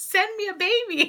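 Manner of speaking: very high-pitched voice, laughing while speaking.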